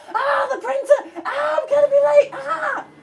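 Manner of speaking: very high, loud, frantic panicked yelling. Describing a secondary school classroom: imitating people shouting. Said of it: "It's just people shouting".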